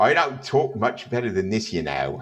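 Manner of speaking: put-on broad Cockney accent with swooping pitch.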